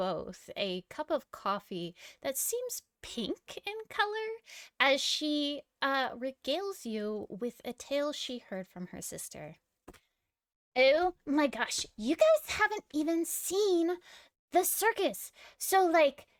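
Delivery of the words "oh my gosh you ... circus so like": bubbly, gushing, excited, eager chatter. Halfling barista pours her guests coffee and shares her sister's tale, excited. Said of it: "Kyla is a halfling. She has a rainbow assortment of colors in her hair. / She has a rainbow assortment of colors in her hair. / You're at the Beans and the Bruises, uh, which is the coffee shop that's".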